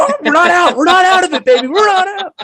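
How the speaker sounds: mock very high, loud, weepy tearful cheer. Recalling a baseball game, the speaker acts out what he said, retelling crying like crazy. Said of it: "I started crying like crazy".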